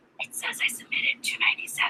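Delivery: hushed, soft, unvoiced whisper.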